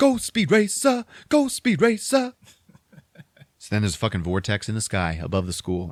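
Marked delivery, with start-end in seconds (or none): 0.0-2.3 put-on, very high, stretched-out, drawn-out hollering. Retelling a movie scene where a character yells from a squad car: imitating someone yelling. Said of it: "he's yelling out".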